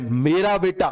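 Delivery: mock bragging, proud, boastful tone. Describing a father meeting his son at a party, imitating a proud father. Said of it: "सबसे proudly मिला रहे, ... ऐसे बोलेंगे".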